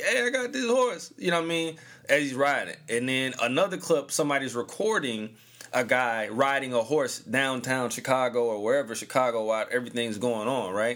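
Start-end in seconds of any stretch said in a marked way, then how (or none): 0.0-1.1 mock shouted call, pitched very high. Describing a clip of a man riding a horse, imitating a man yelling. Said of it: "he's yelling like".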